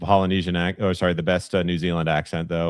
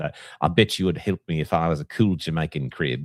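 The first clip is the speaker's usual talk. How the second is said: put-on New Zealand accent. Doing an accent before the other host praises it, New Zealand accent impression. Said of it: "That's a great impression".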